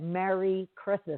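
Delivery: ordinary delivery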